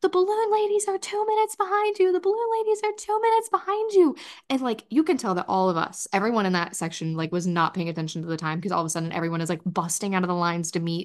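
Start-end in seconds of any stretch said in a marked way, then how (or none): 0.0-4.2 acted-out very high yelled, screamed call. Retelling how bikers near a boardwalk screamed at the group, retelling bikers screaming. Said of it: "the bikers started screaming".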